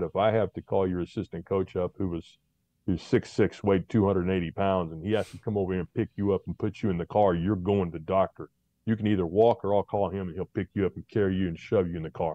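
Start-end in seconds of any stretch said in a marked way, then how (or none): none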